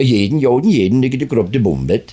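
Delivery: made-up Norwegian-sounding character babble. Retelling a character's catchphrase after being asked to do Norwegian: Svensson mock-Norwegian voice. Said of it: "I've got a character called Svensson".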